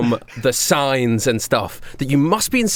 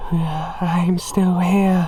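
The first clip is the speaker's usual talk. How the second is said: creepy, eerie voice, much higher in pitch; 4 semitones higher than usual. Speaker acts out the voice that someone hears, in a creepy voice. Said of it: "you hear the voice that says".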